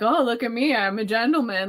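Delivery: very mocking, jeering tone. Retelling how a character mocks Pip: mocking Trabb's boy imitation. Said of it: "very mocking".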